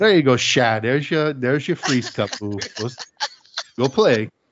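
put-on unhurried, slow elderly lady voice. Speaker recalls paying a quarter for a freeze cup, imitating Miss Mabel. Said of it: "She's like an old lady".

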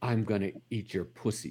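low, hushed, kind of creepy, eerie voice. Retelling an argument, the speaker quotes the other person turning quiet and creepy. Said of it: "she got kind of quiet and creepy and goes".

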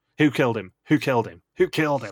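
mock, rapid-fire, pressing delivery. Recapping a challenge, imitating Ellie's rapid-fire questions. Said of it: "fire off as many questions like".

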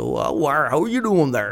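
put-on rustic, country Cornish accent. Describing the accent of David Prowse; David Prowse's Cornish accent. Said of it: "a kind of country kind of Cornwallian accent".

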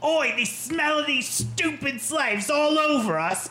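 laid-on squeaky, very high put-on London accent. Speaking in character, turning to tell everyone, in a London accent. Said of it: "a London accent".

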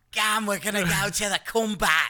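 very high, loud mock Australian accent.

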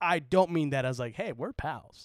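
ordinary delivery

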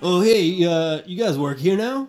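very loud, high-pitched, slovenly clerk voice. Voicing the clerk behind the counter greeting the players: large slovenly clerk voice. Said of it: "large slovenly gentleman behind the counter goes like".

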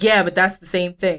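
ordinary talk

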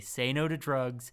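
ordinary talk

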